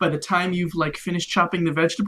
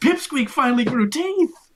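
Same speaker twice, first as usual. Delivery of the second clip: high voice, words spilling through hysterical laughter; 7 semitones higher, 4 dB louder than usual. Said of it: "start laughing hysterically. And they're like".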